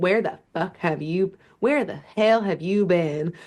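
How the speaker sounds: sassy put-on Southern character voice. Acting out a character tapping her toes and demanding answers, Allegra's sassy Southern accent. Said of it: "got to get the accent".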